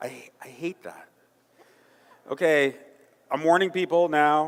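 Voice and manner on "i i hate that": hushed, very quiet, almost whispered voice. Addressing people in a room, now having to talk really quietly. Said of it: "now I have to talk really quietly".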